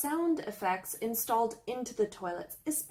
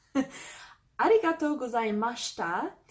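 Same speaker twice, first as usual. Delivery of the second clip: plain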